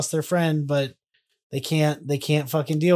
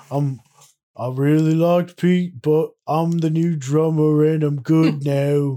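louder put-on caveman-like voice; 5 dB louder than usual. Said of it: "your version of [name] like Cro-Magnon".

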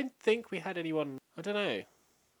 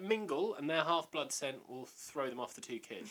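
ordinary talk, nothing marked

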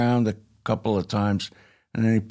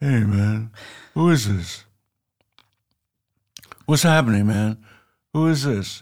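put-on, just-woken voice. Retelling a phone call that woke Jimmy from a nap, imitating Jimmy just woken. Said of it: "apparently he'd been taking a nap".

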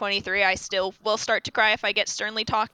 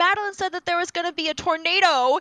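put-on high, crying child voice. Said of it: "And she starts crying".

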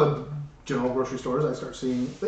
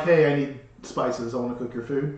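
ordinary talk, nothing marked

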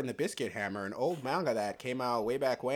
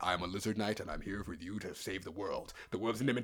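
put-on deep, low talking-lizard voice; 4 semitones lower, 7 dB quieter than usual. Imagining an iguana that starts talking to you, deep voice. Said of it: "talking to you with a deep ass voice like".

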